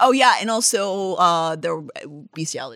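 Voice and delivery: normal talking voice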